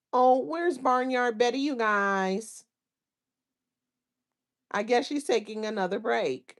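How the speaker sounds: mocking fake voice, "guys" drawn out. Speaker talks about a woman gone from YouTube, quoting: mocking fake voice. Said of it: "this is me quoting her now".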